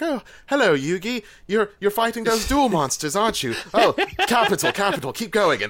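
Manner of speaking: little, very high put-on British accent. Acting out a very nice character's lines, uses a put-on little British accent. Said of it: "he's got his little British accent. He's just like".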